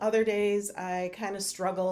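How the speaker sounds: plain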